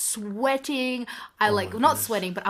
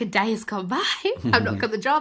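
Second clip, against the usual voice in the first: put-on frantic, spiralling, freaked-out panicky voice. Retelling own panic after a day passed without news: imitating own panic. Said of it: "but I was freaking out".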